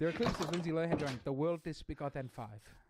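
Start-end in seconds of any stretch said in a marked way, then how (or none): 1.2-2.6 put-on Turkish accent, slower. Describing a celebrity's clips, the speaker quotes Lindsay Lohan's Turkish accent. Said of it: "she s- developed a Turkish accent".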